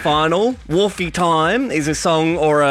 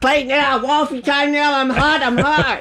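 put-on geeky voice, much higher, slower; 10 semitones higher than usual. Imagining their made-up character Sebastian on the ground, in Sebastian's geeky voice. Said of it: "He's got this real geeky voice".

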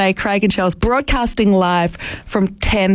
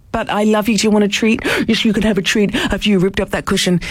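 voice used for talking to a pet. Talking about their dog, addressing the absent dog in a talking-to-dog voice. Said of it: "I'm putting on the dog voice".

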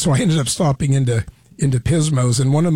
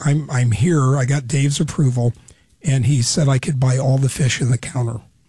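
ordinary talk

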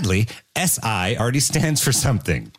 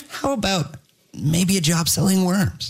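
mock AI assistant voice, higher pitch; 5 semitones higher than usual. Imitating how AI assistants always sound, hesitant and friendly: imitating an AI voice. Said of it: "they always sound like".

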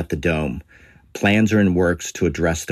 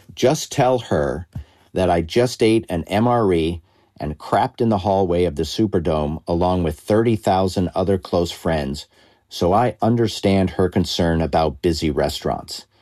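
ordinary talk

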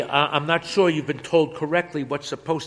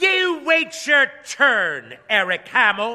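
high, sharp, snappish tone; 8 semitones higher than usual. Mabel answers a young man calling into the booth; snapping. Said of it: "Mabel snaps".

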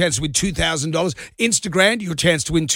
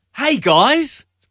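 high, lifted pitch; 8 semitones higher, 3 dB louder than usual. Doing an impression for the hosts on air: Robert Irwin impression. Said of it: "[name] and his Robert Irwin impression".

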